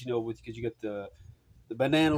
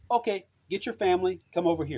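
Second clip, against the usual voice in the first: put-on broken English, much higher pitch; 7 semitones higher than usual. Retelling a woman's Christmas tamale invitation, imitating broken English. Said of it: "in kind of broken English".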